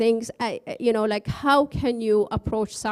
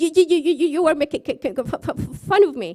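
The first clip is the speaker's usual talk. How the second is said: furious, stammering voice, pitched up; 6 semitones higher, 4 dB louder than usual. Telling a joke, playing the passenger complaining to the bus driver: imitating an angry stutter. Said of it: "goes back so angry and says".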